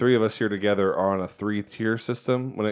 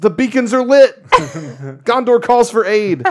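very high, very loud, shrill shriek; 12 semitones higher, 12 dB louder than usual. Speaker retells what somebody at the beach always shouts, retelling a scream. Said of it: "somebody always screams".

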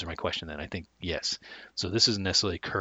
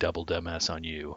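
usual speaking voice

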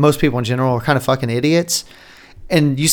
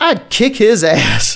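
put-on tough old Texan voice, angry heated rant, pitched up; 7 semitones higher than usual. Describing an old guy at a diner table in an ad, imitating him going off. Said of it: "he's like going off".

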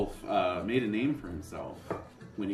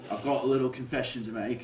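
put-on British accent; 4 semitones higher than usual. Voicing a worried knight confessing to the players: stereotyped British knight accent. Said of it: "Why does he talk like that?".

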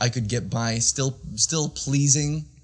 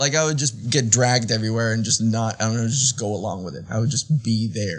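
normal talking voice

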